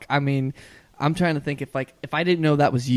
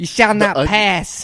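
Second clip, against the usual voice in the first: put-on Boston accent, loud, slow and drawn out; 6 semitones higher, 6 dB louder than usual. Trying out a Boston accent on a Lord of the Rings line: Boston accent. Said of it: "A Boston accent for".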